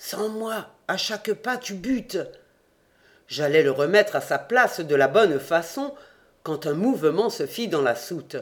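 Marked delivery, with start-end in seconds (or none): 0.0-2.2 muttered through teeth, under breath, much higher. Replying to the narrator, he adds something through his teeth, muttering. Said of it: "il ajouta entre ses dents".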